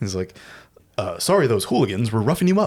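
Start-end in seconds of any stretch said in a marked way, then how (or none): 1.0-2.7 clean-cut, mannerly, courteous all-American hero voice. Describing the movie's hero when he speaks: all-American Clark Kent-y voice, imitating Toxie. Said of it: "So he talks like that".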